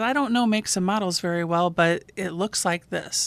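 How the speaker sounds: ordinary talk, nothing marked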